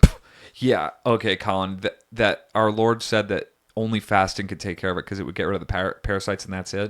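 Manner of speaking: usual speaking voice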